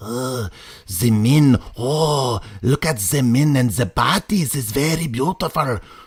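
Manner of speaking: put-on heavy, villainous, evil-sounding German accent. Speaker acts out the Pope lustily watching the men, in an evil German accent as Ratzinger. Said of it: "that's my evil German accent".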